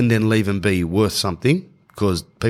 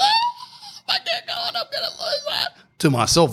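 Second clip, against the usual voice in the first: very high, swooping, sobbed-out wail through tears. Describing how they talk while crying, the speaker quotes themselves, imitating own crying speech. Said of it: "While I'm genuinely crying".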